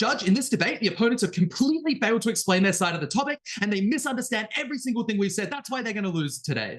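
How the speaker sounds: forceful, attacking delivery. Showing how a debater might address the judge: aggressive debate tone. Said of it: "say as aggressively as this".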